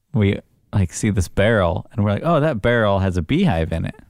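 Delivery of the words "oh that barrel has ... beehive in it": plain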